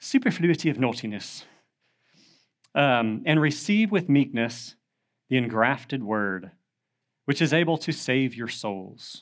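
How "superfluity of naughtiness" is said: put-on English accent. Speaker shows how the phrase must be said: English accent. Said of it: "You have to say that with an English accent".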